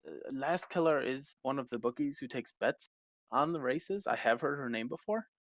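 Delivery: ordinary talk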